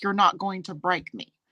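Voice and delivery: plain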